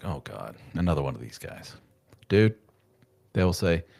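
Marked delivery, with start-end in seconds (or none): 0.0-1.7 weary, exasperated, eye-rolling put-on tone. Imitating doctors who roll their eyes at a patient: imitating an exasperated eye-roll. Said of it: "do the old eye roll and go like".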